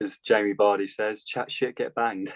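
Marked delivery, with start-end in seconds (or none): 1.2-2.3 put-on voice, as posh as it gets. Quoting a crude saying about a coach who spoke out: put-on posh voice. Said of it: "I said that in the most posh way possible".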